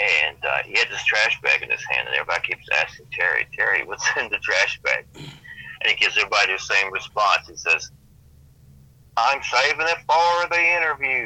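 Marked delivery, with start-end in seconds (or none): 9.2-11.3 put-on Texas-accented voice. Retelling Terry answering everyone who asks about his trash bag, imitating Terry's Texas accent. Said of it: "this Texas accent".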